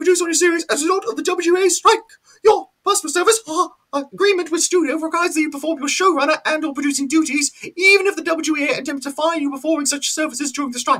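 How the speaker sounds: squeaked out very high throughout. Read out the corporate wording addressed to a showrunner or producer in a Mickey Mouse voice. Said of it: "I'm going to do it in the voice of Mickey Mouse".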